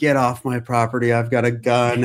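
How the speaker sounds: loud, yelled, shouting voice. Retelling a stranger who yelled from the house: imitating someone yelling. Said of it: "somebody yelled out at me".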